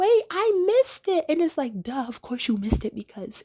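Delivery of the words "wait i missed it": very high, shrill, loud yell. Retelling a girl listening in from another room: imitating someone yelling.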